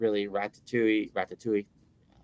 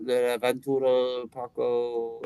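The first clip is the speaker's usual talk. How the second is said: clumsy put-on French accent, "Parco" stretched out; 2 semitones higher than usual. Suggesting a French-sounding park name: bad put-on French accent. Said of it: "What's the matter with my French accent?".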